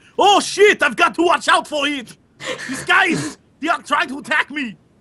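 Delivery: put-on high, poorly done foreign accent slipping toward Austrian. Quoting a man they were watching get beaten: poorly done foreign accent. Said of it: "me poorly doing whatever place he's from".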